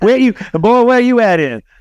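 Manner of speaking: put-on Arkansas accent in a very high voice. Mimicking a co-host's question after saying he's from Arkansas, Arkansas accent impression. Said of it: "That was a pretty good impression".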